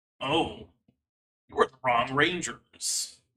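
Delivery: rough, gravelly monster voice. Describing a creature turning toward the listeners and speaking: gravelly monster voice. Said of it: "you hear this gravelly voice that says".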